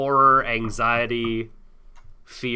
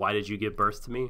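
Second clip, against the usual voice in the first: ordinary talk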